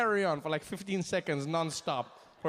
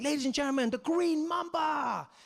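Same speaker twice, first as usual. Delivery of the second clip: high, thrilled, excited showman announcer voice; 8 semitones higher than usual. Retelling how the announcer introduced the first performer: imitating an excited announcer. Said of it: "Deng Basan's really excited".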